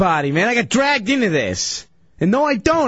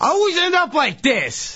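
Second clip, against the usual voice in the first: worked-up, high-pitched yelling; 5 semitones higher than usual. Protesting after losing and getting tape put on his face: yelling. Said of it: "Stop yelling".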